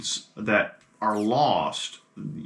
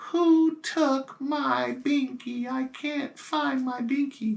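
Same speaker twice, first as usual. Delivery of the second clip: put-on very high, very slow small little boy voice. Describing voices heard, acting out each one in turn: little boy's voice. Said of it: "a little child's voice, maybe a little boy's".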